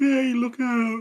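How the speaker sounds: high, off-kilter, uncanny mimicked voice, subtly wrong. Retelling a pale creature's line from a scary story: creature mimicking human speech wrongly. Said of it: "like how you said it, but wrong".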